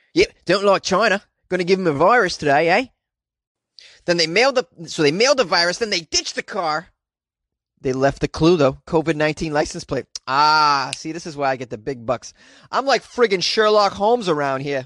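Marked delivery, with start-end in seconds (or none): 0.2-2.9 fake Australian accent, done for show. Joking around and voicing a made-up culprit in a put-on Australian accent. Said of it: "How's this Australian accent?".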